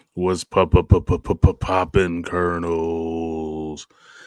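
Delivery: low early-morning voice. Co-host answering the host's greeting early in the day, deep morning voice. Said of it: "this is my morning voice. It's a little deeper".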